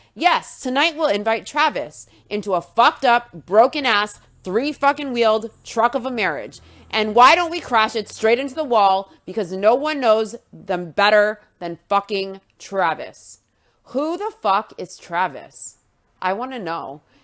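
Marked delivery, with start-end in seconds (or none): none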